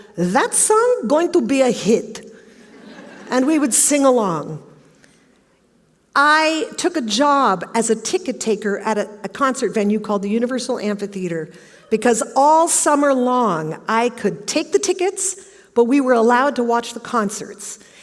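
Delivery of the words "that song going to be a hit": put-on shifted voice with a Greek accent. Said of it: "in her Greek accent".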